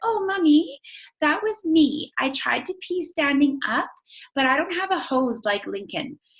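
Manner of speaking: tiny, high-pitched, sing-song cartoonish child voice. Retelling her daughter's confession after a bathroom mishap, little cartoon kid voice. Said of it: "who has this little cartoon voice still at the time".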